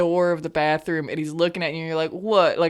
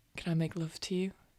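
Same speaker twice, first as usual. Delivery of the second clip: very quiet, soft, hushed romantic near-whisper; 12 dB quieter than usual. Acting out a romantic man's shy question to the listener: said quietly. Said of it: "he says all quietly".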